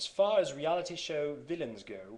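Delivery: clumsy fake British accent. Redoing a reading done in class, poor british accent. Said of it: "poor attempt at a British accent".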